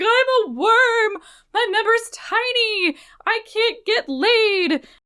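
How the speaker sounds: very high, slow, drawn-out put-on groveling. Retelling how a caught man grovels on the floor: imitating a groveling apology. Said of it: "prostrates himself on the floor".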